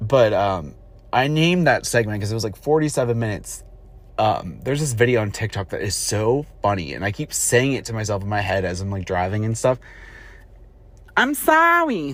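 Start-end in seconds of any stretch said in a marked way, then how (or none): 11.2-12.1 Italian lady voice, pitched way up and loud. Quoting a funny TikTok video, imitating an Italian lady's voice. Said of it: "I'm trying to do the voice".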